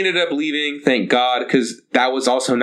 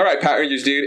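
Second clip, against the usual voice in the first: plain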